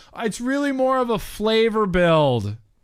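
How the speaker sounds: shout. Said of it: "He's shouting".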